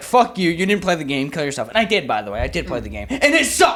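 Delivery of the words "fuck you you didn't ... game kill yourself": angry, pissed-off delivery. Retelling someone's reply after an awkward blunder: imitating someone pissed off. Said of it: "he was, like, pissed".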